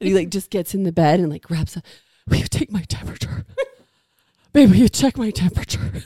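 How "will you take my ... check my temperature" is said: mock, hammed-up, overdramatic poor-me ailing sick voice. Retelling how he asked to have his temperature taken, imitating Mark being dramatically sick. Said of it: "This is so dramatic".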